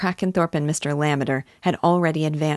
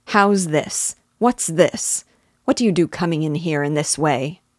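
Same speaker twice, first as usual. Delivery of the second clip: indignant, angry, demanding; 3 dB louder than usual. The squire rises and questions Silas Marner's entrance; asking angrily. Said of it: "asked angrily".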